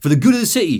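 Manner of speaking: put-on poor, generic English accent. Reading a character's quoted audio log in a crappy generic english accent. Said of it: "Generic, middling, crappy English".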